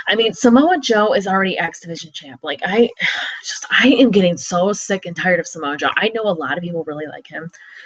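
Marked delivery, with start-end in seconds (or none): none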